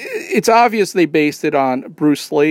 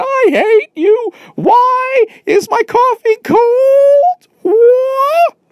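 very high, very slow, loud, drawn-out furious rant; 6 dB louder than usual. Act out a man who can't even enunciate his rage, imitating someone just mad. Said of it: "just like, just mad".

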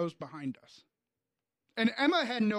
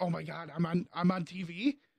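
usual speaking voice

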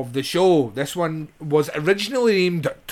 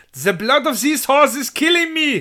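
put-on German-accented voice, pitched higher; 9 semitones higher than usual. Quoting a line from the film: Udo Kier voice. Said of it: "just doing the Udo thing".

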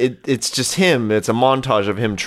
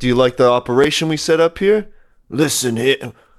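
put-on voice, congested and nasal, higher pitched; 3 semitones higher than usual. Retelling a movie scene as Camden: Camden voice, Stallone with throat cold. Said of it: "what did Camden sound like again?".

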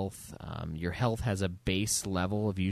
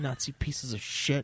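put-on angry voice, deliberate, drawn out, pitched up; 6 semitones higher than usual. Quoting a game character's insults at enemies: imitating Blazkowicz angry. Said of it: "He just gets, like, so mad".

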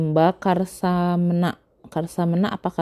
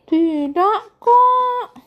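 put-on very high girlish voice. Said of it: "[name] suaranya kayak cewek".

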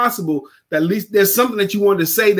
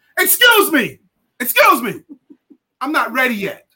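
yelling, slow and high-pitched; 6 semitones higher than usual. Retelling a story of a coach interrupting a client: imitating someone yelling. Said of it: "he yells at her".

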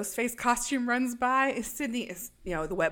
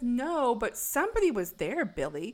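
ordinary talk, nothing marked

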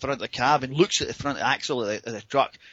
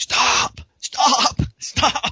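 mock scream, very high, shrill and loud; 12 semitones higher, 6 dB louder than usual. Retelling screaming at the front of the cab to stop, imitating a scream. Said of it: "I start screaming at the front of the cab".

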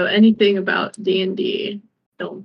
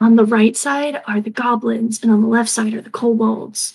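hushed whispered aside; 3 dB louder than usual. A character leans down to a companion, whispering in his ear. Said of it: "kind of like whisper in his ear".

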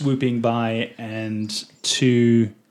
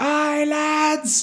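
very high hollered call, lads drawn out. Voicing a ship's crew member shouting to the others: crew member shouting. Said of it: "one of them shouts".

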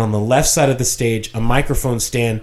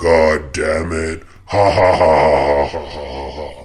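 mock demonic voice, much lower; 8 semitones lower than usual. Recalling a voice over the loudspeaker during his dad's preaching: retelling a demonic voice. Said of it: "we heard somebody say in a demonic voice".

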